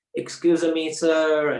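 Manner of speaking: put-on Japanese accent, broken English. Retelling a Japanese TV interviewer walking straight up to the speaker: fake Japanese accent. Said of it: "I'm trying to do like a fake Japanese accent".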